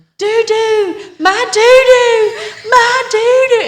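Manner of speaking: put-on drawn-out, very high, loud wailing child scream. Retelling how she screamed at the store for the blanket left in the car: imitating a child screaming. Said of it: "she started screaming".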